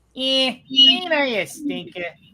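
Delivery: put-on cartoon rabbit voice, loud, big, drawn out. Impersonating a cartoon character just for John, Bugs Bunny voice. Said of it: "what I will impersonate is Bugs Bunny".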